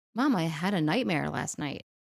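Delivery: normal talking voice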